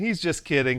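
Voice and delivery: ordinary talk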